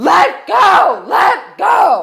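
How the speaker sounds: very high, stretched-out screaming. Retelling a dog attack, reenacting her own screaming: imitating her own scream. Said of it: "I'm screaming".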